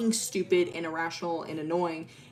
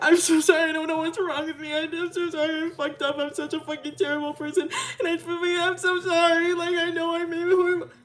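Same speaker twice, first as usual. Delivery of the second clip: very high, incoherent, sobbing blubbering; 12 semitones higher, 4 dB louder than usual. Retelling what happened between Ellie and Milo, the speaker is imitating Milo sobbing. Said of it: "Milo immediately just starts sobbing".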